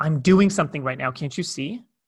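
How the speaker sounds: play-acted curt, sharp, sudden snap. Retelling how Laura answered a request while cooking: imitating Laura snapping. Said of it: "she snapped at me".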